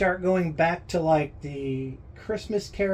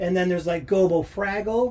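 normal talking voice

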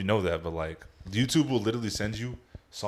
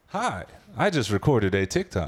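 stock text-to-speech narration voice; 4 dB louder than usual. Joking about the stupid voice on TikTok videos, doing the TikTok text-to-speech voice. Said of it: "The stupid voice on fucking Instagram or on TikTok videos".

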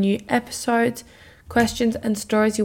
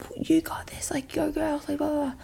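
mock hyped-up, high, screamed cheering; 5 semitones higher, 8 dB quieter than usual. Retelling how rowing teammates cheered in the boat: imitating girls screaming encouragement. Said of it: "the girls would start screaming".

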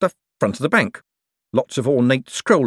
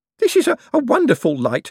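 shrill, pitched-up exclaiming; 11 semitones higher, 3 dB louder than usual. Ignoring an offer just made, one character speaks up; exclaimed. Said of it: "Owlswick exclaimed".

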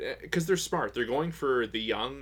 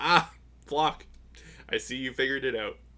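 taunting, knowing, mocking tone. Retelling how the Commandant mocked a frustrating character, imitating the Commandant's mockery. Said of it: "the way he mocked him".

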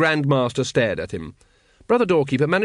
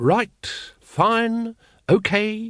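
tired, worn-down, weary voice, pitched up; 7 semitones higher than usual. Throwing up his arms and giving in to the others, speaking wearily. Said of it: "he said wearily".

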